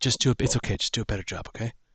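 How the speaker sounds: in a whisper. A player speaks in character to another character, whispering. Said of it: "I whisper".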